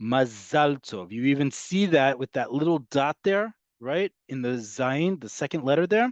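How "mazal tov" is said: mazal with stress on zal, the last syllable. Modern Hebrew lesson on word stress: stress on last syllable of mazal. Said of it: "the emphasis in modern Hebrew is on the last syllable".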